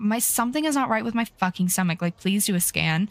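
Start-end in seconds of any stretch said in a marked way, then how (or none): none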